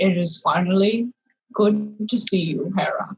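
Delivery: dark, deep, low-pitched voice. A penguin looks up at the approaching visitor and greets her; deep voice. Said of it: "And in a deep voice says".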